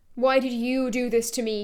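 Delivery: ordinary delivery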